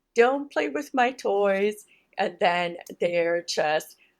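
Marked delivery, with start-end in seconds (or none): 0.2-1.9 put-on child scream, higher and louder. Retelling a brother and sister fighting: imitating a child screaming.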